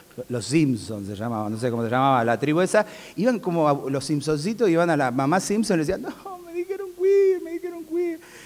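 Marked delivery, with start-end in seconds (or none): 6.0-8.2 put-on crying child voice, much higher, slower. Retelling the Simpsons kids complaining to their mom, imitating crying Simpsons kids. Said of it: "Y lloraban".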